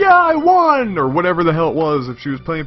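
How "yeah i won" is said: acted piercing, shrill, high-pitched raised scream. Telling of a woman with a winning hand, acting out her scream. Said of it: "she screams".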